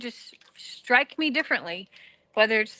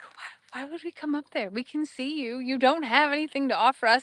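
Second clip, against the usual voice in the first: speaking in voices of a herd of cows; 2 semitones higher than usual. Voicing the cows who stare back after a cattle call: voicing the cows' reaction. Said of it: "They're like".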